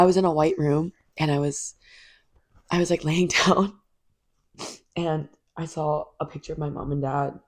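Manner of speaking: weepy, teary, crying while talking. Recounting a dream after a breakup to a listener, crying while talking. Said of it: "I'm crying just looking at you crying".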